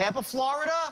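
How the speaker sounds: voice going up at end. Showing a listener how repeating the phrase with a raised ending sounds to the person called. Rising pitch at the end. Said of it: "by raising up my voice at the end".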